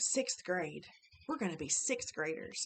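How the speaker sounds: usual speaking voice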